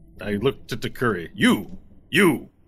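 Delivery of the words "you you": shouting, higher pitch and louder. Calling out to a character forty feet away: yelling. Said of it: "Are you just yelling at her".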